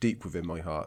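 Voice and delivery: plain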